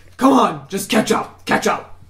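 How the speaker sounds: gruff, pressing tone.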